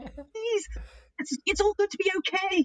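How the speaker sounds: very high, desperate pleading tone. Retelling own teaching to masked students: mock desperate pleading.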